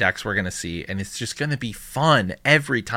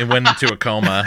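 usual speaking voice

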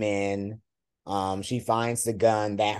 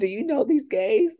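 frantic, high, panicked pleading, acted out; 14 semitones higher, 4 dB louder than usual. Retelling a scene where a character pleads with a boat captain: imitating Tanya pleading. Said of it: "she starts pleading with him".

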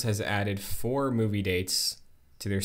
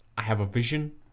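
put-on British accent; 2 semitones higher than usual. Imagining Andy Serkis walking into the Sony office: Andy Serkis impression. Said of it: "Are you gonna do a British accent?".

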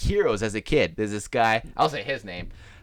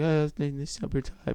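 put-on whisper, higher and quieter; 4 semitones higher, 5 dB quieter than usual. Retelling own past answer to a question: retelling a whisper. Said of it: "I'm just whispering".

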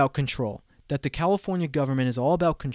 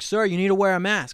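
stern, insistent yell, pitched up; 5 semitones higher, 3 dB louder than usual. Retelling what the reservation guy at the pool said: imitating someone yelling. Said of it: "yelling at me".

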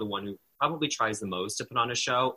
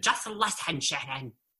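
put-on screaming in a woman's voice; 3 semitones higher than usual. Describing how Tamara screams at Shannon, imitating Tamara screaming. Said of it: "when she's screaming at Shannon".

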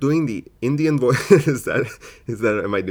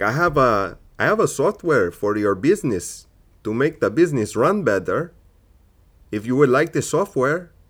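put-on Indian accent, not convincing; 2 semitones higher than usual. Retelling a call from a random number, imitating an Indian caller's accent. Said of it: "I don't have the best Indian accent".

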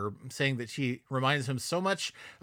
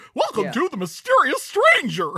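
mock excited narrator voice, higher and louder; 13 semitones higher, 9 dB louder than usual. Imitating the narrator of a Claymation movie: imitating an excited narrator. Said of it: "I just love the excited voice of the".

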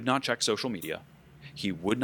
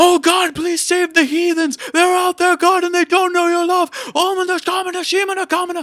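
very high, shrill scream at the top of lungs; 15 dB louder than usual. Retelling a nightly prayer in tongues: imitating someone screaming a prayer. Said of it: "he would be screaming this".

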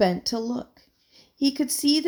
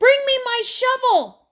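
loud, very high, ringing shout; 13 semitones higher, 7 dB louder than usual. Michael, knee-deep in the pond, calls to Terence; shouted. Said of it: "he shouted to Terence".

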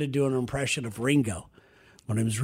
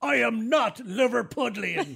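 put-on big, thick, heavy British accent, pitched up; 8 semitones higher than usual. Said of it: "Big, thick British accent".

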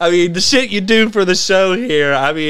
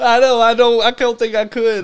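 words broken up by hard laughter, high voice; 5 semitones higher than usual. Answering whether you could eat the whole chip, laughing hard. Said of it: "I don't know why I'm laughing so hard".

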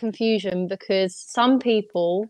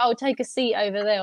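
ordinary talk, nothing marked

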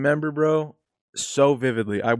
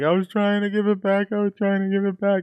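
high, mock sobbing with pleading tone; 9 semitones higher than usual. Retelling trying to explain to adults as a child: imitating own past sobbing.

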